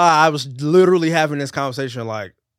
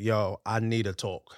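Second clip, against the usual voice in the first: serious voice, lower and quieter; 4 semitones lower, 10 dB quieter than usual. Describing what he'd say to his boys to ask for a talk, quoting self in serious voice. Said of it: "Serious voice".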